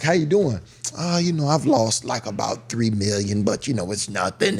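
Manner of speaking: put-on thick, heavy, laid-on Russian accent. Recalling lunch with russian billionaires, quoting one of them in a heavy russian accent. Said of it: "And the heavy Russian accent".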